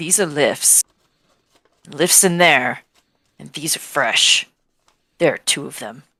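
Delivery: secretive, hushed half-whisper. Voicing a character who calls a companion over to look: half-whispering in character. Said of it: "She's gonna whisper".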